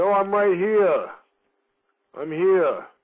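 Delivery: put-on Massachusetts accent, spoken slowly. Retelling how Officer X eventually answers on a call after your begging, in Officer X's Massachusetts-like accent. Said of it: "With his Massachusetts-like accent".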